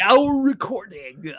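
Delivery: loud, put-on fake announcer voice. Trying out the voice they were just discussing: mock announcer voice. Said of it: "tries to do an announcer voice".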